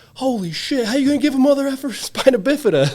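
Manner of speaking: excited, high, loud laughing yell.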